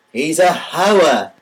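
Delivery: Yiddish-inflected accent on a few short words.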